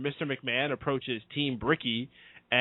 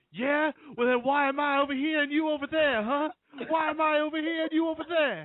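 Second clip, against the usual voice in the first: cocky high-pitched delivery; 13 semitones higher than usual. Retelling Mark Henry answering a heckling fan: Mark Henry impression. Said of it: "And he's like".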